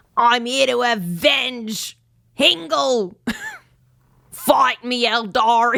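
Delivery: put-on high Australian accent, avenge stretched and leaned on. A player speaks as Krako, in an Australian accent. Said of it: "they have an Australian accent".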